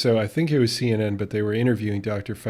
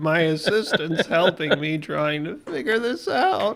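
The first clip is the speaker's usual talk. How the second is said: put-on old man voice, higher; 8 semitones higher than usual. Retelling lawyers confused on a video call: imitating an old man voice. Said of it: "they also had that old man voice".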